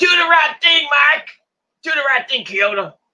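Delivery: high, loud yell. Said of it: "And Joe's like".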